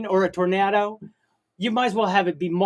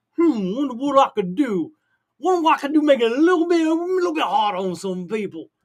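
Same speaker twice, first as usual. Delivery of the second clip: put-on Cajun accent, pitched up; 5 semitones higher than usual. Acting out a person out to make things harder for people, in a Cajun accent. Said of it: "I guess I did a Cajun voice".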